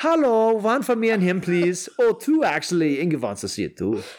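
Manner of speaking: put-on unplaceable accent, vaguely Swedish. Acting out buying movie tickets, the speaker uses a vague, maybe-swedish accent. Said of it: "I don't know what accent that was, by the way. I think it was Swedish".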